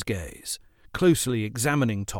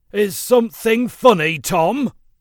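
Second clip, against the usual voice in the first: very high, loud, drawn-out snap; 10 semitones higher, 8 dB louder than usual. Speckle trudges over to Tom, who began to laugh, snapped. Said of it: "he snapped".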